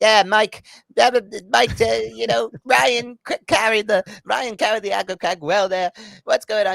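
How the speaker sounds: shrill, booming, very loud, high British announcer voice. Recalling the show's announcer Mo taking a hand-off, imitating Mo. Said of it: "who was like the British like uh, announcer".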